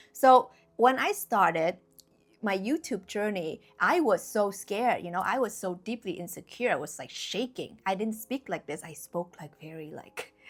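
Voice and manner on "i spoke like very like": much softer, hushed, ASMR-like voice. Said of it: "A S M R".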